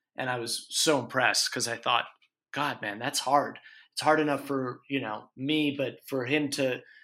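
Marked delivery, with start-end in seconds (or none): none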